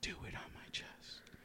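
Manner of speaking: soft, breathy, intimate whisper. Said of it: "she pulls you in close".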